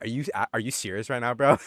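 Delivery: let-down, incredulous tone. Retelling how someone dropped his wallet at security, acting out disappointed disbelief. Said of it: "I've never seen him so disappointed".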